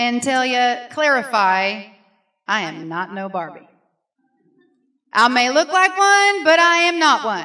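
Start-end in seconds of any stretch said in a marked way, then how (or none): 2.5-7.5 put-on, swooping Southern Missouri drawl. After the pastor called her Barbie, the speaker answers the audience in a Southern Missouri drawl. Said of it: "get in my Southern Missouri drawl".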